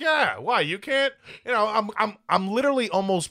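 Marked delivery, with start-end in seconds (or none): 0.0-1.1 teasing, mocking tone. Retelling a conversation, the speaker replays teasing a man, retelling a mocking reply. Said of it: "I'm like mocking him at the same time".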